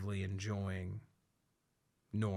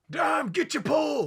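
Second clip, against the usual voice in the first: very high, loud crowd yell. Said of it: "people would be like".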